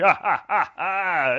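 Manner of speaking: loud, high-pitched gloating laugh. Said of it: "he sits back in his seat and he laughs and he's like".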